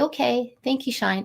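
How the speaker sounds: quiet, subdued delivery. Demonstrating what to say when the dog starts barking, low quiet voice. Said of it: "And it's that low".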